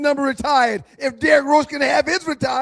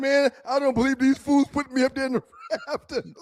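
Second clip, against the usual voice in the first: put-on fake crying; 4 dB quieter than usual. Mocking a player's jersey ceremony tears: mock crying as Derrick Rose. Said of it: "He crying like".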